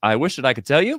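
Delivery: ordinary talk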